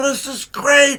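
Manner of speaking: delighted, crowd-like exclaiming. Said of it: "And they go".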